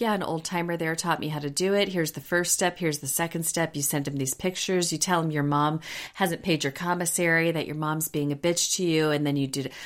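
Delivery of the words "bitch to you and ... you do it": normal talking voice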